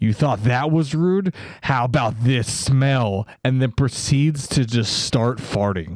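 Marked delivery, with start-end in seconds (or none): 0.0-3.3 exclaimed, emphatic delivery. Retelling what a man said after passengers boarded, retelling an exclamation. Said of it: "the man exclaimed".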